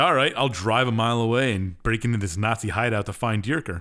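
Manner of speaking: ordinary talk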